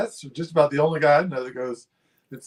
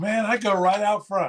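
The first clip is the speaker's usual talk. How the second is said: put-on, pitched-up, friendly voice; 6 semitones higher than usual. Retelling what a fishing friend answered: imitating l j. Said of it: "I wish I could do a good L J impression".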